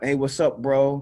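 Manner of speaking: stock hip hop slang delivery. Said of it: "speaking in a dialect that's very stereotypical hip hop".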